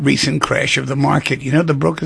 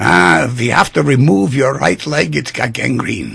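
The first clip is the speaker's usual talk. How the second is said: put-on German-accented voice. Telling a joke, voicing the german doctor speaking to the english pilot, put-on german accent. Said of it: "pardon my German accent".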